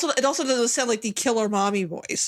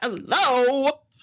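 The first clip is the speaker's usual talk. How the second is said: irritated, annoyed, stretched long, drawn out; 4 semitones higher than usual. Retelling how a movie character sounds saying hello: imitating an annoyed character. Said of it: "now she just sounds annoyed".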